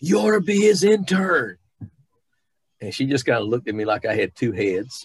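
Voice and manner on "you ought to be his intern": shrill, far-carrying, very high-pitched loud holler. Retelling how a friend yelled across the barnyard: imitating Lorelei yelling. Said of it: "yelled across the barnyard and said".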